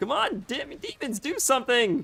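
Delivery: voice breaking very high, cracking under strain. Urging the demons to act during a hard fight, voice cracking under stress. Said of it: "Voice is cracking".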